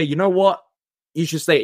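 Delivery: ordinary delivery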